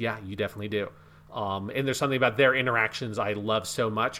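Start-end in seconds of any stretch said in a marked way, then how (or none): 0.0-0.9 soft, hushed delivery. Describing a game scene, retelling one character's reply to another, said quietly. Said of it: "Peter just sort of quietly says".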